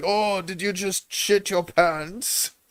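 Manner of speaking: put-on German voice. Joking about languages, picturing German guys in a bar: imitating a German bar guy. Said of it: "German guys in the bar".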